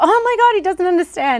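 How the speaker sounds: high, loud, distressed bride voice.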